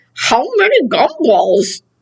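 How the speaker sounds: words mashed around a big wad of gum. Showing learners a word while pretending to chew a big wad of gum. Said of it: "pretend like I have a big wad of gum in".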